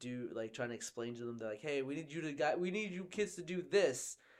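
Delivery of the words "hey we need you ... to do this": yelling, higher pitch. Retelling a movie scene where Nebula yells at the kids: imitating Nebula yelling. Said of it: "yelling at them".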